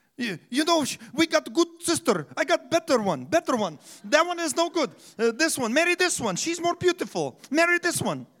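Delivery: put-on Middle Eastern accent. Retelling a Bible story, imagining a man speaking in a Middle Eastern accent. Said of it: "I can imagine him speaking in that accent, Middle Eastern".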